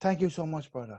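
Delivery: put-on Irish accent. Doing a passing bit, thanking someone who helped out: Irish accent. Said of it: "I'm gonna do the the Irish one".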